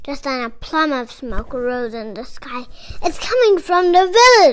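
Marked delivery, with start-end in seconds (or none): 3.0-4.5 high, very loud outcry. A man grabbing his sword as smoke rises in the sky, crying out. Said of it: "cried Robin".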